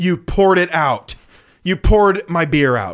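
loud, drawn-out, play-acted fuming father voice. Retelling how their dad reacted to his poured-out beer, imitating a fuming dad. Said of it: "my dad starts getting like fuming".

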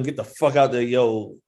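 ordinary delivery

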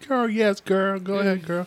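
high, drawn-out, excited encouraging hype voice. Retelling how a friend filmed her twerking friend: imitating the friend filming. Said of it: "Her other friend's video recording".

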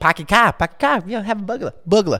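put-on Boston accent. Friends trying out regional accents, one speaker doing a Boston accent. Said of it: "That's Boston".

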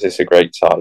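ordinary talk, nothing marked

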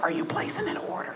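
soft, secretive whispering. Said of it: "Mom, why are you whispering?".

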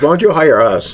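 joking sarcasm. Speaker jokingly asking to be hired, fully aware it's a joke, sarcastic. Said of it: "We're saying this sarcastically".

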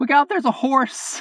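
imitated shouting voice. Retelling a warning called out of a car window: Adam impression. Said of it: "let me do my Adam impression here".

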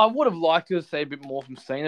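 ordinary talk

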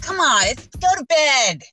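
acted yelling. Retelling what was said to a child at bedtime: imitating own past yell.

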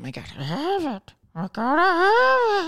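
very high, swooping creature voice, "have" stretched out. A comedian acting out chasing a dream, in a Smeagol voice. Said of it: "That's my Smeagol impression".

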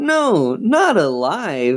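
high, gleeful cheering. Reading Lindsay answering her sister Chris's question, gleeful cheer. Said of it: "Lindsay cheered gleefully".

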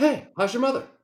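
very high-pitched, casual, relaxed voice. Joining in after hearing the other speaker's impression, doing a Mark Wahlberg impression. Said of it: "your impression of like is Mark Wahlberg".

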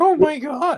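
imitated prepubescent voice. Mocking how the actor playing Herman Munster sounded: imitating a prepubescent teen voice. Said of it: "He just sounded like a prepubescent teen".

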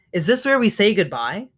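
ordinary delivery, nothing marked

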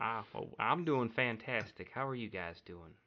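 put-on Southern drawl, Kentucky-sounding accent. A guest greets the host and the others on the show in a put-on southern accent. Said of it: "Is this Kentucky".

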